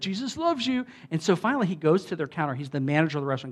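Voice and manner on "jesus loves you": obnoxious, overbearing, in-your-face voice, pitched up. Retelling how customers greeted the manager: imitating an obnoxious greeting. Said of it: "they were just really obnoxious with".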